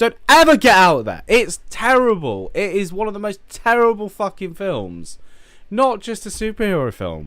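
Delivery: high, loud, emotional rant. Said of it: "I just get really emotional about it".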